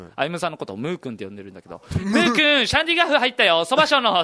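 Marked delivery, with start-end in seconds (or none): 2.0-4.3 mock announcer, big, loud, high voice. Retelling what someone blurted out to others, in a loud voice. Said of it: "大きい声で言うんです".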